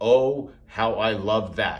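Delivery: very slow, drawn-out sarcasm, acted. Reacting to the strike zone approach to touching: dripping with sarcasm. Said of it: "dripping with sarcasm".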